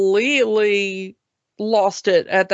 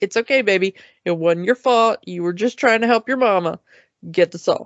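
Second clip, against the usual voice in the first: put-on calm, flat, emotionless voice. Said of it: "no emotion, no panic, no nothing".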